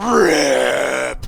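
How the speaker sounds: beast shouting. A player's inner beast yells at them inside their head: beast yelling. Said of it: "your beast is yelling at you".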